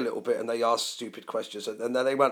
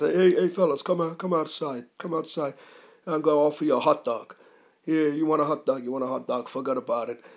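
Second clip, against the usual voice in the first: mob-guy wiseguy street-talk patter; 4 semitones higher than usual. Retelling how Uncle Dino invited the band outside: imitating Uncle Dino. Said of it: "he actually spoke like that".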